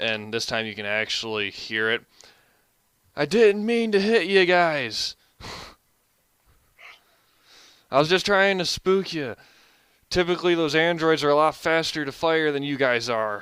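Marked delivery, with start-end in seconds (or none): 3.1-13.4 full-on loud, high screaming. Voicing a surrendering stranger calling out to the approaching players: screaming out loudly. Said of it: "starts screaming out even louder".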